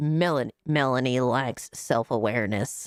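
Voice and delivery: robotic, mechanical, machine-like voice. Reading a message aloud after the TTS broke: robot voice. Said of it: "robot voice. ... Did I do a good enough robot voice?".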